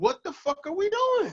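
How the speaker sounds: high, slow, incredulous disbelieving outburst.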